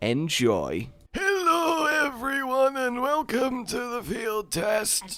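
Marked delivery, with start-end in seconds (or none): 1.1-5.2 put-on very high, soft elderly woman voice. Opening the field test for everyone, old woman voice. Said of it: "Does that sound like an old woman".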